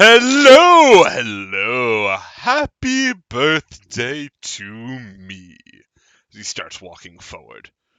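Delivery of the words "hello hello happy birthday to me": very loud, very slow, booming, swooping gentleman's voice. Voicing an arriving skeletal figure with a crown: voicing a skeletal crowned gentleman. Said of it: "with his walking stick and goes".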